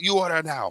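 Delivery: aggressive, imitated tone. Retelling how the lady who takes orders greets customers: imitating an aggressive order-taker. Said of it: "like, aggressive".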